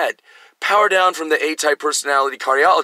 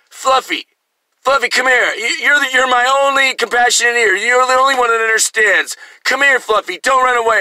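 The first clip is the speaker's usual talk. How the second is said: put-on drunk voice, high-pitched, coaxing and pleading; 8 semitones higher, 4 dB louder than usual. Retelling a father calling the dog back: imitating a drunk father. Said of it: "he's already drunk when he shows up".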